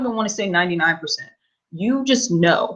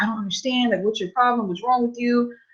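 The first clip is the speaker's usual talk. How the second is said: high, rushed, hysterical sobbing outburst; 5 semitones higher, 4 dB quieter than usual. Retelling how someone reacted to being cut off, imitating hysterical crying. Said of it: "he was just like hysterical, like crying".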